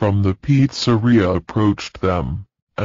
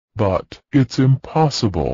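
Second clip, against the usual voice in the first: plain reading voice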